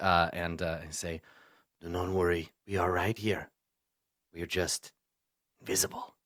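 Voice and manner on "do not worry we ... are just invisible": strange raspy voice, as if two at once. Speaking into another character's mind while invisible: strange raspy dual voice. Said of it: "the strange, like, raspy dual voice".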